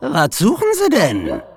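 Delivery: loud, high-pitched, barked demanding tone. An old woman pulling her dachshund close challenges the narrator: barked. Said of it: "Bellte eine alte Frau".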